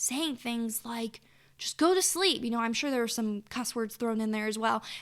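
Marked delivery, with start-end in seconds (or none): 1.6-2.4 loud, high, exasperated, frustrated yelling. Recounting trying to put the baby down for a nap: retelling yelling at her. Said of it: "I'm literally yelling in her face".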